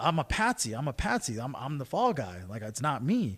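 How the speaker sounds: ordinary delivery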